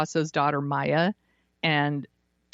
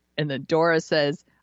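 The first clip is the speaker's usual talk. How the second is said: usual speaking voice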